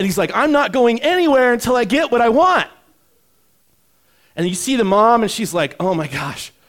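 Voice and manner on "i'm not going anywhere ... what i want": put-on high, loud, furious toddler tantrum yell. Describing a child's tantrum on the floor, imitating an angry child. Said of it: "he's either yelling or he's like angry".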